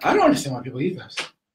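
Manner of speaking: winded, out-of-breath, very high-pitched voice. Speaker reacting to eating very spicy wings, high-pitched voice. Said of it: "that was a real high pitched voice".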